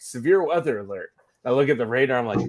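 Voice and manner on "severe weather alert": plain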